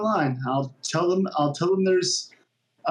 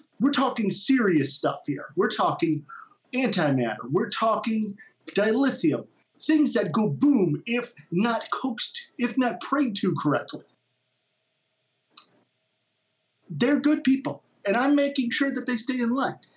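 pitched-up put-on voice of a burly man; 6 semitones higher than usual. Role-play, speaking as the ship's chief engineer in a character voice. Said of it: "the bandanaed, bulky, in chief engineer of the ship".

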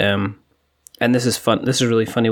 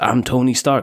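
put-on American accent, child voice, slower. Describing kids playing outside, mimicking their American voice. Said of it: "And they'll be doing that voice".

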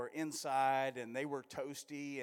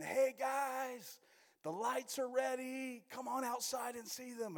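put-on shout, higher pitch; 10 semitones higher than usual. Retelling calling the family outside to see the lights: retelling own yell. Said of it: "I yelled in".

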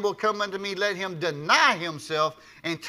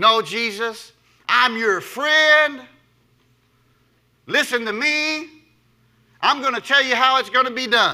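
mock-proud put-on voice; 5 semitones higher, 7 dB louder than usual. Retelling Peter's reply to Jesus, acting out Peter's proud voice. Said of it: "Can y'all hear that in Peter's voice?".

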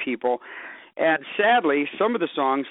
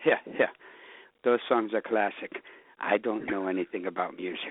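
put-on German accent, half-whispered; 7 semitones lower, 6 dB quieter than usual. Acting out a manager speaking into your ear about the songs, in a half-whispered German accent. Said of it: "always a German accent".

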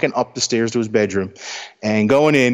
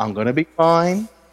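put-on relaxed, carefree voice, higher pitch; 6 semitones higher than usual. Retelling how a seriously ill father calmly brushed off worry: imitating relaxed carefree dad. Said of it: "relaxed, like nothing's happening".

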